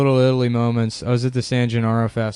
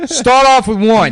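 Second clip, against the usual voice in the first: put-on Italian-American accent, higher and louder; 11 semitones higher, 8 dB louder than usual. Retelling what a stranger on the corner said: imitating a stereotypical Italian-American guy. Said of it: "saying Secaucus in that voice".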